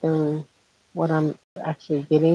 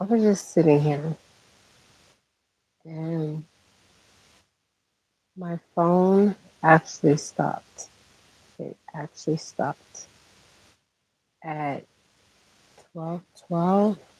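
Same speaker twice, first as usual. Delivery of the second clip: talking a little low, quietly. Talking to listeners without waking a sleeping daughter: talking a little bit low. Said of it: "I'm talking a little bit low".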